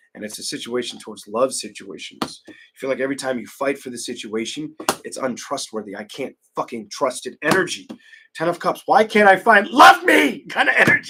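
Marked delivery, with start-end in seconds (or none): 8.8-11.1 shrill, very high, full-volume yelling. During a tarot reading, speaker calls out a card's energy, yelling. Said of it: "I'm sorry I'm yelling".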